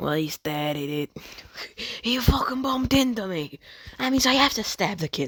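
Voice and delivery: put-on strong New York accent, pitched high. Voicing Conqueror in the story, in Conqueror's New York accent. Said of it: "very New York".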